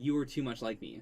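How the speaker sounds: ordinary talk, nothing marked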